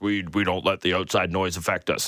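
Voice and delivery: put-on robotic voice, deep. Mimicking how a hockey player answers, in John Tavares robot voice. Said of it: "in his very best robot voice".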